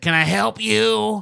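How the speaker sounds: creaky, raspy smoker voice, very high pitch. Retelling what a woman said when they walked in, imitating her like a smoker. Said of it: "I think I was pretty close and accurate".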